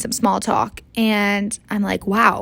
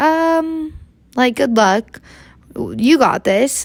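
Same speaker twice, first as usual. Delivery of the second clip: mock hesitant, slow, doubtful, drawn-out um; 3 semitones higher than usual. Retelling a stranger's doubtful wish of luck before skiing: imitating an unencouraging tone. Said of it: "He didn't sound very encouraging".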